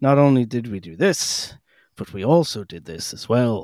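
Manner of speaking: put-on posh British narrator voice. Imitating the british narrator's sentence pattern: fancy british accent. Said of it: "the pattern that is, that he does is".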